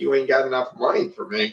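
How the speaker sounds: put-on haughty dismissiveness. Speaker retelling what a woman told a man, mock-dismissive. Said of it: "she was effectively like".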